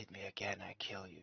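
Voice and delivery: rushed, quick, hushed whisper under the breath. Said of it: "you hear him whisper".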